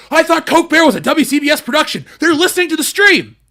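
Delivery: wired, hyped-up, shrill, very high, very loud, blaring delivery. Reading a viewer's message aloud, part in capitals: pretending to be on cocaine. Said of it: "I'm gonna read it like I'm on cocaine".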